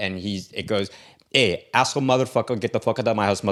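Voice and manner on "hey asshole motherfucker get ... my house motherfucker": put-on Russian man's accent. Mimicking an older brother's stand-up bit: imitating brother's russian guy. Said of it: "as a, a, this Russian guy".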